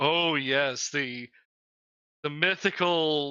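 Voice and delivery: very slow, drawn-out, mocking sarcasm. Describing how he said 'mythical', doubting the legends: imitating sarcastic disbelief. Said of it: "it was with that like level of sarcasm".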